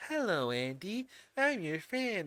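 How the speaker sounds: slow, soft, creepy voice. Showing how you expected the actor to start out, in a soft, really creepy Mark Hamill voice. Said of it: "he was being all kind of soft and really, really creepy".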